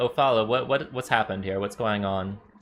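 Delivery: courteous, concerned, quick elf merchant voice. Game master voicing a moon elf merchant character: soft Nuhar Seralim voice. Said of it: "in a very soft voice".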